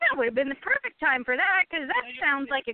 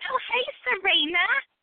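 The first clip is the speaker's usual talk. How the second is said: high-pitched voice with strong Brooklyn vowels; 6 semitones higher than usual. Imitating Molly greeting Serena: Molly's Brooklyn accent. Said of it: "thinks of Molly going".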